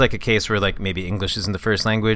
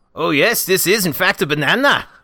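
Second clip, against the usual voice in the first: put-on cartoon donkey voice; 8 semitones higher, 5 dB louder than usual. Asked to give a donkey, the speaker does a Donkey voice. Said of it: "give me a donkey".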